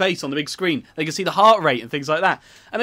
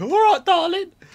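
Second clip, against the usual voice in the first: unconvincing, very high falsetto, failed woman's voice; 12 semitones higher than usual. Trying out voices with a partner, the speaker attempts a woman's voice. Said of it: "That's not a woman's voice".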